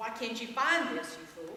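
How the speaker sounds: ordinary talk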